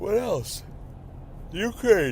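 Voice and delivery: talking through a yawn. A podcast host moving to the next news topic, yawning while speaking. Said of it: "Excuse me for yawning".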